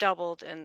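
ordinary delivery

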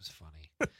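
put-on breathless, unvoiced, wheezing whisper.

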